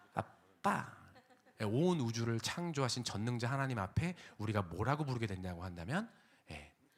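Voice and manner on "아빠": put-on high, short-tongued, lisping childish whine in baby talk. Showing how daughters ask for pocket money: imitating a daughter's lisping baby talk. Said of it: "제가 하니까 좀 끔찍하네요".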